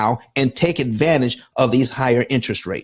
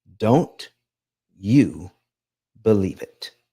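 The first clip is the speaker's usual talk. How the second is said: speaking more quietly, lower; 4 semitones lower than usual. Warning viewers about finance advice, looking into the camera: lowered voice. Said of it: "I'm lowering my voice and I'm looking straight into the camera".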